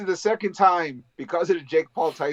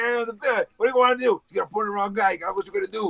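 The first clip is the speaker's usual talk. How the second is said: plain New Jersey accent; 4 semitones higher than usual. Riffing on how Batman should sound, doing Batman with a Jersey accent. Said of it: "Penguin's got a Jersey accent".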